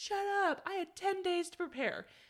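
high-pitched yelling. Retelling a man answering an angry crowd, imitating him yelling. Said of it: "he's yelling".

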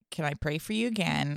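put-on, exaggeratedly calm voice. Retelling what the man said on the mic before a crowd, imitating someone super calm. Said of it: "he's just being super calm and everything".

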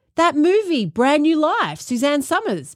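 high, enthusiastic, excited gush. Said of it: "I enthusiastically interrupted, going".

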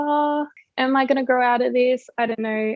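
ordinary talk

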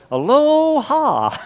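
mock aloha, high, slow and drawn out.

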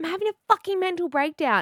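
very high, shrill yelled outburst. Retelling what a woman in a loading zone said: imitating someone yelling. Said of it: "she yelled at me out the car door".

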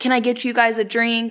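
plain

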